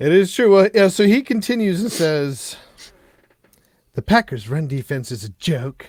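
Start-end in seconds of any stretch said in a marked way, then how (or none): 3.9-5.9 snooty, dismissive put-on voice, snotty and dropped low. Reading out what someone else said, in a mock-snotty voice. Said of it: "I'm going to say that in a snotty voice".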